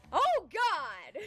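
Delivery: put-on very high shriek, blurted out suddenly. Recalling your own reaction to what a stranger said, retelling a scream. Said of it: "my mouth screams out".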